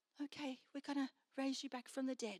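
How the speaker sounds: very quiet, soft, hushed voice. Acting out the scripture scene of raising a girl from the dead, in a quiet voice. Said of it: "In a quiet voice".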